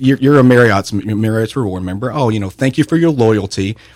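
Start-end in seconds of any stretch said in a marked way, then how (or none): none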